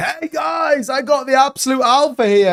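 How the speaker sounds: very high, slow, drawn-out know-it-all guru boast. Mocking a chat commenter who posted a smiley face: imitating a self-styled super guru. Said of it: "as if you're, like, some super guru that's come in going".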